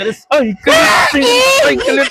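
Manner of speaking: high-pitched, exasperated, mocking shouted yell.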